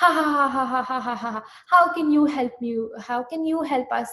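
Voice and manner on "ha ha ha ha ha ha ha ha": full, loud, hard, scornful mocking belly laugh. Storyteller acting out the monkey's reply to an offer of help, acting out a hard laugh. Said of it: "he laughed so hard".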